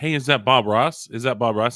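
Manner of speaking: bold, loud hollered yelling. Retelling what the group then called out: retelling our own yell. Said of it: "we just started yelling it out".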